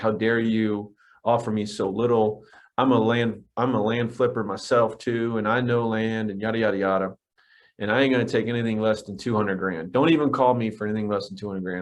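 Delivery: plain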